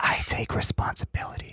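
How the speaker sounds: put-on almost-whisper. Imitating the voice people use in such statements: imitating an almost-whispering voice. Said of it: "in the voice that they do where you're almost whispering".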